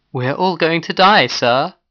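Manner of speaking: trembling, quavering, high-pitched shaky voice. Peters turns to his leader after Gork's threat, voice shaking. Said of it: "his voice shook".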